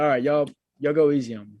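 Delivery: ordinary delivery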